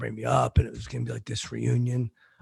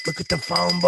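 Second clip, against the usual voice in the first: screaming yell, pitched up and very loud; 7 semitones higher, 7 dB louder than usual. Retelling what they screamed while holding up a phone book, screaming. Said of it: "I'm screaming it".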